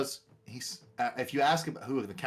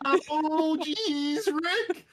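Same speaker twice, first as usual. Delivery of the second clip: put-on nervous, stammering cartoon teen voice, higher and louder; 4 dB louder than usual. Joking after being told the character sounds like Morty: Morty impression. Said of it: "just a little bit of Morty".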